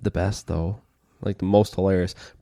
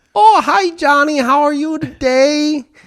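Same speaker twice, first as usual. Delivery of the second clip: put-on very high, loud, wholesome little old lady voice; 5 dB louder than usual. Acting out a bank teller asking a customer: little old lady teller voice. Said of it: "you're talking like a little old lady teller?".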